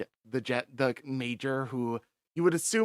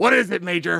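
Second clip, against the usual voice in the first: rough, gruff, very loud voice; 7 semitones higher, 11 dB louder than usual. Narrating a call where a voice answers from the other end, in a gruff voice. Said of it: "a gruff voice comes on over the other end".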